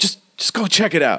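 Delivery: irritated, annoyed tone at very high pitch. Voicing a character leaning against the door, sending others to check: annoyed. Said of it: "he looks really annoyed".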